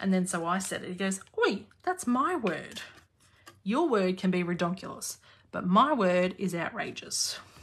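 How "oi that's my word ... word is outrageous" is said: cheeky, sassy schoolboy voice. Retelling Hunter claiming his word: sassy Hunter impression. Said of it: "sassy personality when he says it".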